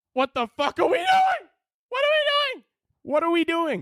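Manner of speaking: very high, pitch jumping sky-high. Ranting about who gets banned from Twitter, very high-pitched voice. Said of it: "My voice just had to go up eight octaves".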